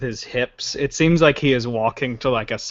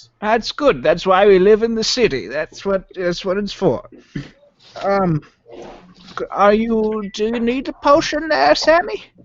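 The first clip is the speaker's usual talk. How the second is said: put-on old man voice, much higher pitch; 7 semitones higher than usual. Voicing the grandfather as he greets his grandson and friends, in an old man voice. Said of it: "It's an old man".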